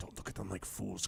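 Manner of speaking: barely audible, very quiet, hushed whisper. Voicing a hidden figure urging prisoners out: whispering. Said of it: "some silent whisper going".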